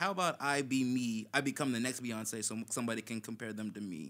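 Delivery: plain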